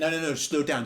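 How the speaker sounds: put-on French accent. Retelling how he stopped them and told them to slow down, French accent. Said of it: "That was my French accent".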